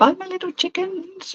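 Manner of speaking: voice shooting way up high. Signing off at the end of a video, voice going up high. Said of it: "my voice went up then".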